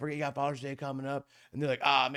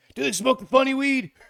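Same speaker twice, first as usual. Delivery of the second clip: very loud, high, shrill drill-sergeant screaming; 12 semitones higher, 11 dB louder than usual. Recounting being questioned by a drill sergeant, he is imitating a yelling drill sergeant. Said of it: "they're yelling at me".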